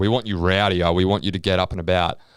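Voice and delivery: ordinary talk, nothing marked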